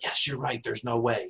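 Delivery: speaking in a whisper. Answering voices through a door, in character: whispering. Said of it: "So I whispered through there".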